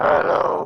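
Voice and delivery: disguised, electronically modulated voice-changer voice. Revealing a supposed true identity in a scene: modulated voice. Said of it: "it's just a modulated voice".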